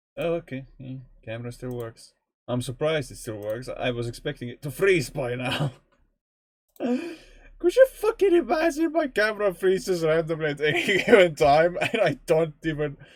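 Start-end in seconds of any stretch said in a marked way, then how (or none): 6.8-13.0 high voice, giggling and laughing through words. Talking to viewers about the camera freezing, laughing while talking. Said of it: "I feel sorry for laughing".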